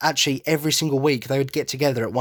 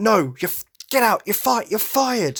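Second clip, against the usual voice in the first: sudden, high-pitched yell, tripping over words; 8 semitones higher than usual. Retelling a scene where a character fires two coworkers: imitating someone yelling. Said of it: "starts yelling at them like".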